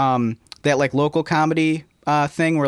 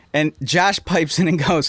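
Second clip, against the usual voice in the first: plain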